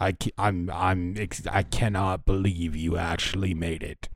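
heavy scornful, withering, contemptuous disdain. Voicing a half orc who greets a rival: heavy disdain. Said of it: "with heavy disdain".

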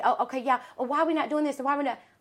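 put-on agitated, worked-up, fussing voice. Retelling how a client takes over at the event: imitating a worked-up client. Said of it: "You're getting yourself all worked up".

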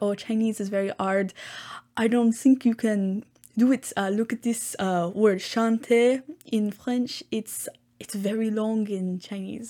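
put-on French accent. Retelling what the grandfather said about learning Chinese, in a bad French accent. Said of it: "that's a very bad French accent".

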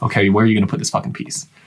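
mock stern, no-nonsense, low and dead-serious. Retelling what the Lego master builder asked the kids: imitating a super serious man. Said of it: "The dude was super serious".

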